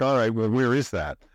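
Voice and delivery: ordinary talk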